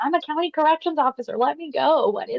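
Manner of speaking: all-out, high screaming outburst. Describing a video of a corrections officer being detained: retelling a scream. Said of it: "He's screaming".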